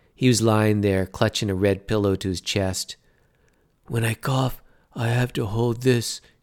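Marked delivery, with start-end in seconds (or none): 3.9-6.2 hushed whispering. A hospital patient after heart surgery speaks to his visitor, whispered. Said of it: "he whispered".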